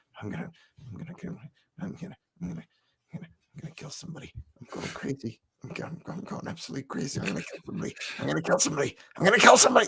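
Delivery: really quiet, muttered whisper. Retelling what the man standing next to him kept saying: imitating someone whispering. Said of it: "he's whispering, like, really qui".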